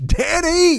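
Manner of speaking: silly high mock voice.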